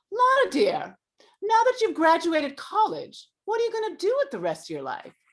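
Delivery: theatrical, dramatic delivery with swooping pitch. Retelling what her actress mother said after graduation, imitating her dramatic mother. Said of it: "so she's very dramatic".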